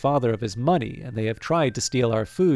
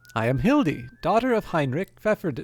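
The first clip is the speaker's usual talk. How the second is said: put-on young girl's voice, raised; 6 semitones higher than usual. Voicing a young centaur introducing herself to the players: Hildy voice. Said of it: "a charming young centaur with the upper torso of a teenager".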